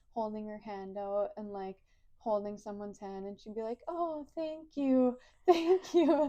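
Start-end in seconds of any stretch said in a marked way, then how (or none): 3.9-6.3 acted laughing speech, very loud, very slow. Retelling her thanking someone unseen from her bed: imitating someone laughing while talking. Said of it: "sometimes be laughing".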